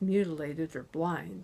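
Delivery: ordinary delivery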